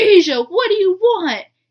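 high, loud, annoyed yelling.

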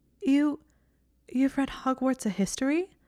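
slightly squeaky voice. Hermione turns to look at Draco and asks him, voice squeaking slightly. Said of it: "Her voice squeaked slightly".

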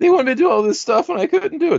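put-on rushed, very high, quick little girl voice. Retelling a talk with Zoe about a school fitness test, imitating Zoe's little girl voice. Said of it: "That's my little girl voice".

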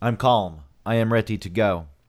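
flat, machine-like robotic monotone speech. Arguing about calling 911, the speaker insists he is calm: robot voice. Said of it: "I speak like a machine".

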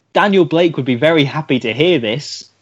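normal talking voice

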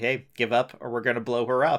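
ordinary talk, nothing marked

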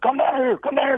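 very high-pitched, shouted hollering call. Retelling what the man below shouted up at him: imitating someone hollering. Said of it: "he started hollering".

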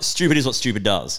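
normal talking voice

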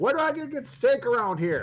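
mock shouting. Speaker acts out a man screaming into his cell phone, imitating someone shouting. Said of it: "Why are you screaming into your cell phone".

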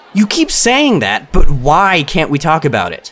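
frustrated, pressing tone. Pressing a girl who keeps refusing to discuss it here, getting frustrated. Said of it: "getting frustrated".

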